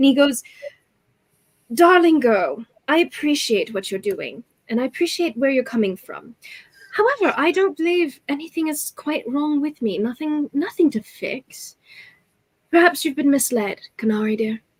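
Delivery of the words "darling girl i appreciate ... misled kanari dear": placid, untroubled, calm, serene character voice. Voicing a character blocking an attack with a shield: calm, serene smiling character voice. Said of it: "He seems to be very calm, serene almost".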